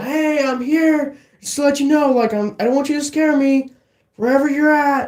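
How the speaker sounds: put-on, very high yelled announcing voice. Retelling walking into the restaurant to warn the boss: imitating own yell. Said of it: "I yelled".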